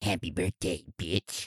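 very quiet, soft put-on character voice. Reading a birthday shout-out for Jessie from her sister, in a Grinch voice. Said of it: "in the Grinchiest voice".

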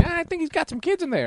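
very high, birdlike put-on parrot voice. Acting out a parrot reporting a neighbor at the police station: put-on parrot voice. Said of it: "And he's like".

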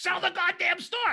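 acted-out, very high screaming. Retelling fund managers ordering brokers to sell: imitating a fund manager screaming. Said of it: "getting screamed at by the fund manager".

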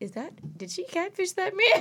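hushed, secretive whisper under the breath. Retelling how he whispered a question to her, imitating a whisper. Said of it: "why are you whispering?".

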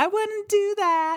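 very high little ghost voice. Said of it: "Ooh, that's creepy".

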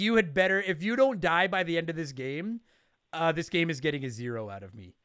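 ordinary talk, nothing marked

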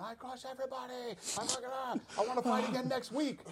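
very high, shrill screaming. Retelling how a fighter reacted after a quick win: imitating Khamzat Chimaev screaming. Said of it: "Then starts screaming".

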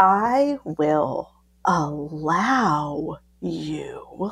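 drawn-out, very slow, deep low voice. Retelling their own turn to respond, retelling a really slow, deep reply. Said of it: "I responded really slow and really deep".

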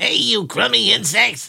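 high, creaky, raspy, drawn-out voice. Imitating the other speaker talking to insects, on request: Gilbert Gottfried impression. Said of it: "Could you do an imitation of me talking to the insects?".

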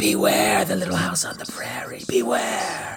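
eerie whispering. Voicing the whispers from the corn: ambient spooky whispers. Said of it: "I'm trying to do some ambient whispers".

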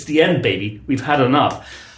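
ordinary talk, nothing marked

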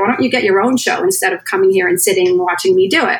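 ordinary delivery

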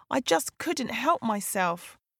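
ordinary delivery

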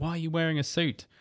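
put-on ranting voice.

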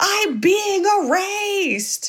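put-on, very high, long drawn-out scream. Retelling a film scene where the man throws his chicken: imitating a character screaming. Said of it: "and he screams".

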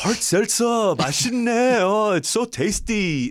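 attempted Korean accent. Asked to try it right now, the speaker attempts a put-on Korean accent. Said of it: "how about your like Korean accent?".

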